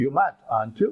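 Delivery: ordinary delivery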